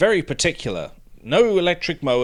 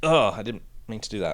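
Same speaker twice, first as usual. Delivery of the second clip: ordinary talk, nothing marked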